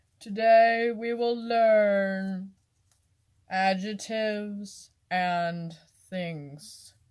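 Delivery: flat droning monotone, learn drawn out. Speaker mocking how flat their video sounds: droning monotone professor. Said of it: "monotone like".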